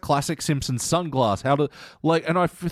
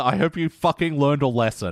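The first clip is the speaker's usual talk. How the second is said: ordinary delivery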